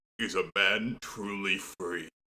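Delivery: put-on deep voice. Recalling how the show's first episode starts: imitating a deep voice. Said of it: "you just hear that deep voice go".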